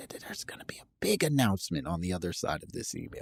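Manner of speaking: hushed, very quiet, whispery teasing tone. Speaker teasing listeners about an announcement after the next email, quiet and whispery. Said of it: "I'm getting real quiet and, and whispery".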